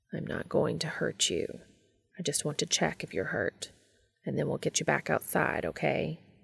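soft and quiet. Cass speaks to a frightened bat in the tub, softly. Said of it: "Cass said softly".

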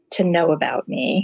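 ordinary talk, nothing marked

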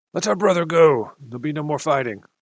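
called out loudly in rough Common. Voicing a newcomer in a game scene who yells out: yelling in rough Common. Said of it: "in rough comedy, yells out".

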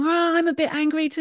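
restrained annoyed grumble. Retelling how a grown man answered a yelling two-year-old, retelling restrained anger. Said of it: "obviously restrained, because you're not going to grown man yell at a 2-year-old".

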